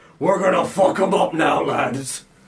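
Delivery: loud orc warband leader voice. Voicing an orc leader calling to two orcs: orc leader voice. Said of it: "he just goes".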